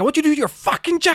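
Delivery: very high-pitched, ranting, shouting voice. Recounting a man yelling in the lobby during recess: retelling a yell. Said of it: "just yelling".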